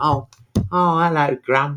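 put-on young child voice, slow. Retelling a funeral advert, voicing the little kid: imitating a little kid in an advert. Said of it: "there's like the little kid".

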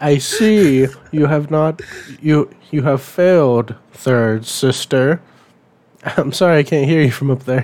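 dark character voice. Joking about the Grand Inquisitor speaking down from a helicopter: Grand Inquisitor voice. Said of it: "He's like".

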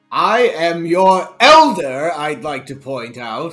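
put-on old professor voice. A magic professor character, just called boy, points out he is the elder, old professor voice. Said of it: "I'm just an old professor of magic, doctor of magic, professor of culture extraordinaire".

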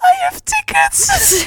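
high, slow, tearful crying with relief. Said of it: "crying all of a sudden".

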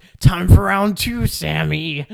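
creepy call, very loud and high pitched. Recounting a wrestling segment, the speaker quotes Kenny in his creepy BTE voice. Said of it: "he's doing his creepy BTE voice".

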